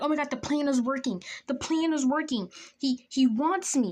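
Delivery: frantic, freaking-out voice. Retelling a moment a plan with a boy seemed to work: retelling own freaking out. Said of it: "I'm freaking out 'cause I'm like".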